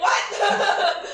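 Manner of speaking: very high, shocked, surprised shriek. Playing a character who stops dead and screams in surprise: screaming in surprise. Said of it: "No, don't scream!".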